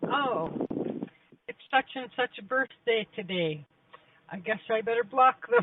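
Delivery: offhand, businesslike, matter-of-fact aside. Retelling a friend's remark about blocking people: imitating a friend, matter-of-factly. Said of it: "And she says it, like, with just so, like, matter-of-factly".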